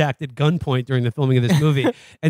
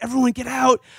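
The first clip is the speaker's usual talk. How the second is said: high, loud screaming; 9 semitones higher than usual.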